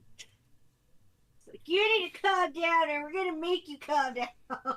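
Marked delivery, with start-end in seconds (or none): 1.7-4.8 very loud, intimidating, high-pitched booming voice. Playing a character taking a bonus action, in a booming voice. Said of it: "with the booming voice".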